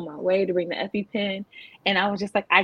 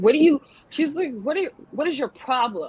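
mock rude voice, higher and slower; 6 semitones higher than usual. Retelling what the doctor said after news of the collapsed lung, imitating a rude doctor. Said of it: "And the doctor was so rude".

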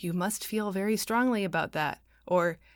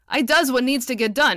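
very loud, lordly, arrogant, haughty tone; 4 semitones higher, 8 dB louder than usual. A man responds after a woman's remark to the group: haughtily. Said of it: "said Dale haughtily".

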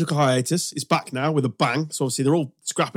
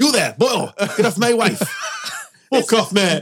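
tough, aggressive, threatening tone, pitched up; 7 semitones higher than usual. Imitating a front-row rugby player whose wife is being flirted with, mock-aggressive. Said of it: "That's not aggressive, is it?".

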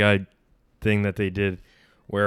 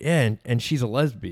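normal talking voice

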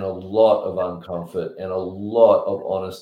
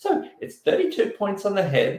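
tiny, very high, sugary, sweet little voice; 13 semitones higher than usual. Retelling what a girl said when he called her, in a little sweet voice. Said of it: "in a little sweet voice".

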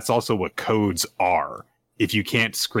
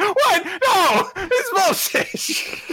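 outraged tone, much higher pitch. Telling a story, the speaker acts out reacting to what the others did: retelling own outraged reaction. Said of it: "And I was like".

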